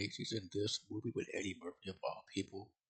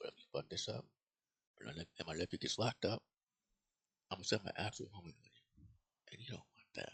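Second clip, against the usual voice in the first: hushed, murmured stage whisper aside. Retelling a movie scene where one character threatens another: imitating Luis Guzmán half-whispering. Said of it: "he whispers to him".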